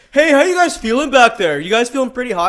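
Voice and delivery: very loud, shrill, obnoxious holler. Telling a story about a guy on a hot bus, imitating a loud guy. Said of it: "he was talking so loud".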